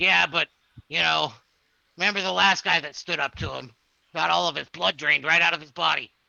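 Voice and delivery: gruff, grumbling, rough, creaky goblin voice. A game master voices a goblin replying to another goblin's complaint, in a goblin voice. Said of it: "He's like".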